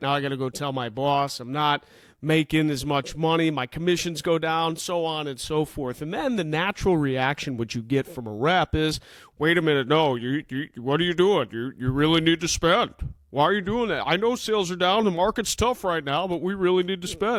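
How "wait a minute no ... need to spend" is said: insistent, pushy salesman voice. Explaining budget cuts, impersonating a sales rep's reaction. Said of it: "That's my impersonation of a rep like that".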